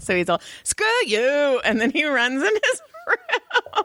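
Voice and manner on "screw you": put-on Scottish accent. Retelling Brody's new thing of saying screw you, imitating Brody's Scottish accent. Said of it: "he does it in a Scottish accent".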